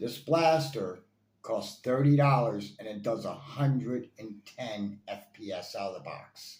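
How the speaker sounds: slow, deliberate, each word laid out carefully. Reviewing a toy blaster, the speaker repeats its price and speed, speaking slower. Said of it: "I'll say it a little slower".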